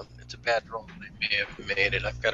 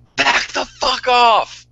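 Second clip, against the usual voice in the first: shrill, very high, loud shout; 13 semitones higher, 6 dB louder than usual. Drawing a gun on a group of attackers: yelling in character. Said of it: "and I yell".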